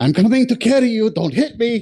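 frantic, very high, panicked voice. As Nerys, calling to the one she is about to carry, in a panicked mental voice. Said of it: "Nerys's panicked mental voice".

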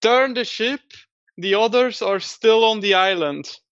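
called out up high in a character voice. Playing a character who shouts at the crew: screaming in character.

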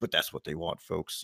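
dead serious, low-pitched delivery. Imitating how Rush Limbaugh would turn dead serious after joking: imitating Rush Limbaugh going dead serious. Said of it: "he'd just be like".

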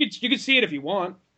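put-on sassy attitude. Retelling a reply to someone asking about the gym bag, with mock sass. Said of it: "gave him just a little bit of sass".

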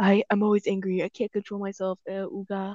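put-on brutish monster voice. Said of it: "Why did you kind of sound like him?".

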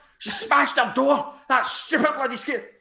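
play-acted furious, angry, raging screaming. Retelling how the mother screamed on the phone: imitating someone screaming. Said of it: "She starts screaming at me on the phone".

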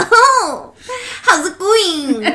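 very high-pitched, very slow, cutesy anime voice. Trying out a voice for her new mic: cute anime character voice. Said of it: "I want to sound like one of those cute little, like, anime characters".

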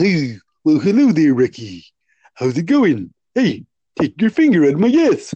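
deep cartoon moose voice, low and swinging pitch. Acting out a cartoon scene for the other speaker: Bullwinkle voice. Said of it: "you can hear Bullwinkle".

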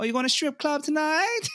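high, teasing, mocking put-on voice.

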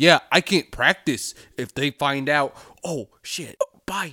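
dumb, clueless-sounding voice. Retelling how he gave himself away: imitating the killer's confession. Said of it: "that's my impression of the confession".

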